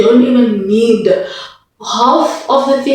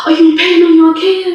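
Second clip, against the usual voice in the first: mock-panicked, much higher; 7 semitones higher than usual. Retelling how the speaker's mom reacted to them being in pain, imitating mom freaking out. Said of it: "she was freaking out".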